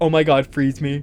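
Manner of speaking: usual speaking voice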